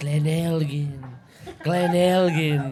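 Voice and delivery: put-on Italian accent, very slowly stretched and drawn out. Describing hearing an older colleague repeat a whisky name, imitating an older Italian colleague. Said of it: "my older Italian colleague just go".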